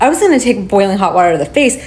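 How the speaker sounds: "gonna" stressed, rattled off fast. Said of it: "I wasn't gonna take".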